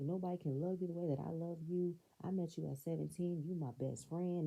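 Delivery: ordinary talk, nothing marked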